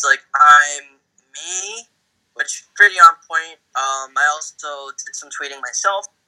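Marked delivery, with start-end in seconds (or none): 0.4-1.9 loud, swooping, baffled and totally lost tone. Retelling a Simpsons scene, voicing Jimbo sounding confused. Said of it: "Jimbo's just confused".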